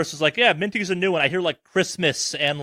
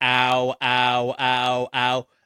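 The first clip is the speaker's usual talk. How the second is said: put-on very slow, flat, droning, rote ows; 3 semitones lower than usual. Describing a man calling out whenever his drugs were due, imitating a monotone rehearsed ow. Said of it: "this weirdly monotone, rehearsed sounding ow".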